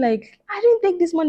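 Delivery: quavering, unsteady voice. Retelling being accused of taking money, the speaker acts out her denial: retelling a shaken denial. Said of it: "I was shaking".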